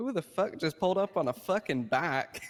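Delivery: put-on heavy, laid-on southern Florida accent. Retelling what you shouted when a guy on a bike pulled up, really southern Floridian accent. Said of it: "my really southern Floridian accent kicked in".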